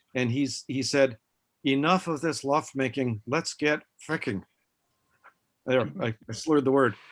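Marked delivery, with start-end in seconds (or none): 1.7-4.5 strong, thick, heavy put-on Polish accent. Speaker quotes a polish officer at a meeting; thick polish accent. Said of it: "imagine a thick Polish accent".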